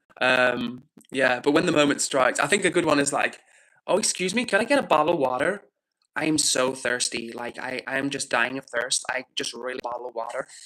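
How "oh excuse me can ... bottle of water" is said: put-on American Valley girl accent. Asked by a listener to do an American accent: American Valley girl accent. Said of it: "let me hear that American accent".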